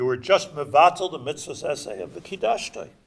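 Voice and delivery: normal talking voice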